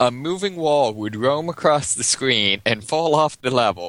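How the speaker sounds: usual speaking voice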